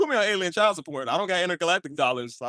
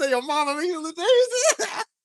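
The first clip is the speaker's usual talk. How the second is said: laughing while talking, pitched higher; 12 semitones higher than usual. Retelling Daddy's line from an old sermon video, imitating someone laughing while talking. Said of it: "he was laughing".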